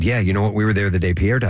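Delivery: ordinary talk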